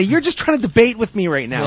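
ordinary delivery

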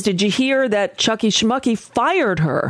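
ordinary delivery

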